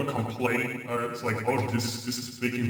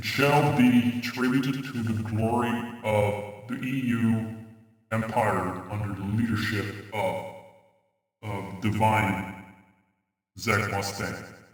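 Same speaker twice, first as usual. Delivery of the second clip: booming god voice, lower pitch; 3 semitones lower than usual. Playing a divine ruler of the EU empire demanding tributes, speak in a booming god voice. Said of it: "Am I very booming right now?".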